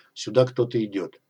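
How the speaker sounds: usual speaking voice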